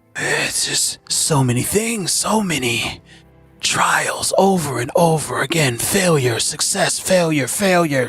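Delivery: muttering to himself. Game master voices a man muttering thoughts to himself. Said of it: "He just seems to be like muttering thoughts".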